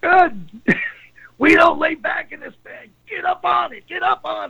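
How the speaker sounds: acted, raspy, very high-pitched screaming rant. Retelling how Buddy screamed at him for laying back, retelling Buddy's screaming. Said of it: "Buddy starts screaming at me".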